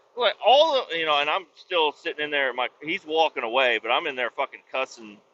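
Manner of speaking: usual speaking voice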